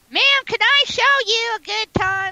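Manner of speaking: mock high-pitched nasal voice. Retelling what a ghost said behind her: imitating a high-pitched nasal voice. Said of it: "He's very high-pitched, nasally, all up in his nose".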